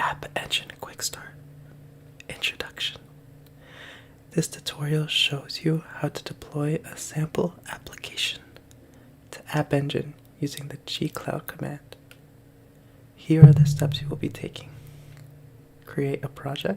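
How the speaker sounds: ASMR-style reading voice. Reading a tutorial aloud up close to viewers, trying an asmr voice. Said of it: "or try to read this in A S M R".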